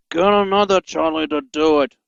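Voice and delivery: said with a growl. Reading a story aloud, voicing Spamcan's reply with a growl. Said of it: "growled Spamcan".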